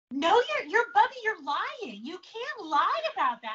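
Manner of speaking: put-on protesting kids' voices.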